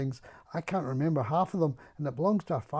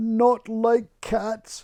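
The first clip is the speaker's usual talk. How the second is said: loud, shrill, impassioned, passionate cry; 7 semitones higher, 8 dB louder than usual. A narrator reads the Mouse answering Alice, shrill and passionate. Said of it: "cried the mouse in a shrill, passionate voice".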